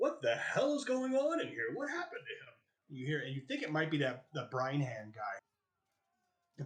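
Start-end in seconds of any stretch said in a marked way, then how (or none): 0.0-2.5 big booming bellow, pitched very high. Narrating a game scene, the speaker voices someone in the other room, booming voice. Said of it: "familiar booming voice in the other room".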